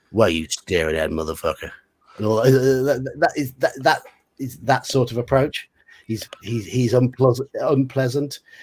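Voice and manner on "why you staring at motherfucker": put-on American accent. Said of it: "that wasn't too bad an American accent for you".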